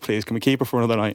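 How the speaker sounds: mock beseeching, pleading, begging tone. Retelling pleading in the car on the drive back: imitating own past pleading. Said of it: "I am pleading".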